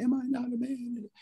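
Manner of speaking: put-on trembling voice. Voicing a man in chains asking the question, imitating a quivering voice. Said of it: "you can almost hear his voice quivering".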